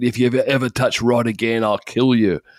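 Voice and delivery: put-on strong British accent. Retelling a threat a man made to the pusher: Steve's British accent. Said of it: "he says in his British accent".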